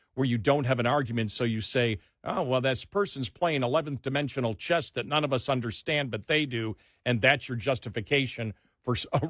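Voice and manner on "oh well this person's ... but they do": normal talking voice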